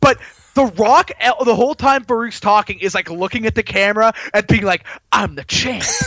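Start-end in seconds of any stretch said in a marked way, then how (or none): 5.1-5.9 hushed, soft stage half-whisper. Retelling a wrestler looking at the camera: imitating The Rock half-whispering. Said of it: "he's, like, whispering it".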